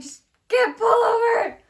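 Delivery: shrill, very loud, high-pitched, stressed-out yell. Retelling a drive when a cat was seen on the road: imitating own past yell. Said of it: "So I yell at my mom".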